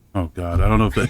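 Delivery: plain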